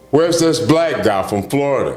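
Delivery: high-pitched booming roar. Recalling coming through the doors and hearing Ken Waller call out, big roaring voice. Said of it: "I hear this big roaring voice".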